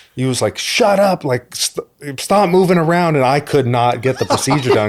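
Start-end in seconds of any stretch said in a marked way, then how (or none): 0.6-3.2 mock yell, high-pitched and drawn out. Retelling a dentist visit on laughing gas, imitating a dentist yelling. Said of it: "the dentist was yelling at me".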